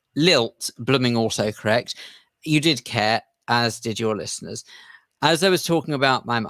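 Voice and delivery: ordinary talk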